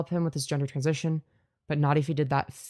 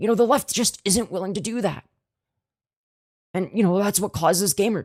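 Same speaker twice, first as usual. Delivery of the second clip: strained, constipated-sounding put-on voice, higher and louder; 4 semitones higher, 4 dB louder than usual. Mocking a speech about Gamergate: Brianna Wu impression. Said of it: "Thanks, Brianna".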